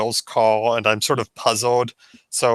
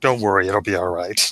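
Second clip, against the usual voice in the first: soft, lower whisper, close and intimate; 3 semitones lower than usual. Hugging a friend goodbye in character: whispering in someone's ear. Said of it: "I whisper in her ear".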